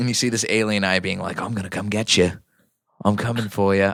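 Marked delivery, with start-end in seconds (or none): 1.4-3.9 put-on Australian accent with a menacing, threatening tone. Voicing an alien eye being described, in an Australian accent. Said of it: "I don't know why I keep doing an Australian".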